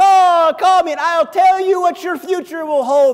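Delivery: bad Jamaican accent, high and loud. Recalling how Miss Cleo pitched her number, in a bad Miss Cleo Jamaican accent. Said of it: "I can't do a Jamaican accent".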